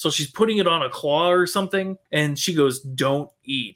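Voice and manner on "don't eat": low, mock sarcastic tone. Retelling a movie scene, quoting what she says: mimicking a sarcastic line. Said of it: "she says it like sarcastically".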